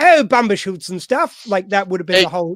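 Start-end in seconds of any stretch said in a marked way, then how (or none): 0.0-1.5 loud, stagey, put-on English accent. Imagining the Scottish character pitched with an English accent instead: mock English accent. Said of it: "was an English accent".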